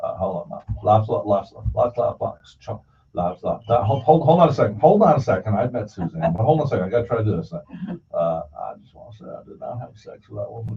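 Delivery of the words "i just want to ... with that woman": very quiet, soft, breathy, almost whispered voice. Warming up a Forrest Gump impression by doing Bill Clinton first: Bill Clinton voice. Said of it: "I have to do Bill Clinton first".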